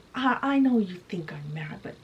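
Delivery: ordinary delivery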